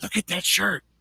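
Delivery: hushed, quiet whisper. Retelling what a lady in a store said to her husband: imitating a whisper. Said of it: "whispers to him".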